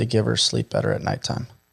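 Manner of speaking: quiet, low whispered voice. Retelling a dying father's final words: imitating a whisper. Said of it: "he whispered it and he goes".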